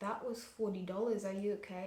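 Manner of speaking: soft, hushed half-whisper. Retelling what a friend said after a round of drinks: imitating a half-whisper. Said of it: "my friend whispered to me".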